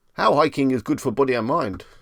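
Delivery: put-on Chinese accent. Reading out a list of search questions, put-on Chinese accent. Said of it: "I don't know why I said that in a Chinese accent".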